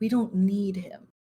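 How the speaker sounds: soft, half-whispered aside. A player's character leans over to another character, half-whispering. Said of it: "I'm gonna lean over to Irene and whisper".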